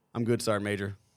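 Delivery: ordinary talk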